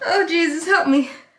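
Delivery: high-pitched laughing voice, words broken up by giggles. Coming back from a party, trying to stop laughing: laughing while talking. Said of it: "let me stop laughing".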